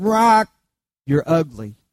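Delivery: squawking parrot voice. Telling a joke, voicing the pet-shop parrot calling to a passing lady, squawking parrot voice. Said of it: "the parrot squawked and said".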